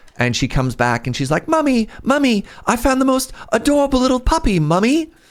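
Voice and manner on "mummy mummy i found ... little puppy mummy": put-on very high-pitched five-year-old British girl voice. Retelling how a little girl came back to her mum, imitating Millie, little British girl. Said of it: "five-year-old British girl thing".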